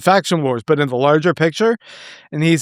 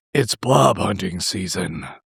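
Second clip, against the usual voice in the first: deliberate, slow, rough, drawn-out voice shift; 10 semitones lower, 4 dB quieter than usual. Quoting the audiobook's last line, Duke Nukem voice. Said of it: "it sounds like Duke Nukem".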